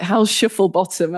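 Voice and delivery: mock teasing, mocking male voice. Recalling a man from Oldham who mocked the speaker's accent; imitating Graham teasing. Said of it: "he used to make fun of my accent".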